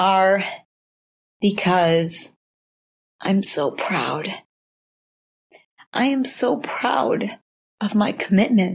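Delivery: slow, tearful speech, crying through words. Explaining to listeners the tears they can hear, crying while talking. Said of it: "These tears that you hear".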